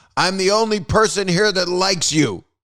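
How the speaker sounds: mock yelling, high-pitched. Retelling a screening where someone grabbed them, imitating Mel Brooks yelling. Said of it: "grabs me by the head and yells".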